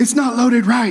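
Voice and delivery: high, angry, aggressive, fault-finding mom voice. Describing a mom after someone else loads the dishwasher, imitating an angry mom. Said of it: "very aggressively get angry".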